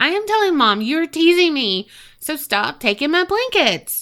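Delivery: small, high, whiny little voice. Narrator reads the sister's reply in the dark in a little whiny voice. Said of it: "She replies in a little whiny voice".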